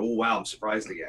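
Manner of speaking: ordinary delivery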